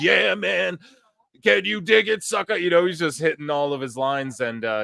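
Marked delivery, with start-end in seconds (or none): 0.0-2.6 play-acted high, raspy, rough crowd-pumping shout. Retelling an announcer hyping the live crowd: imitating Booker T yelling. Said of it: "he just starts yelling".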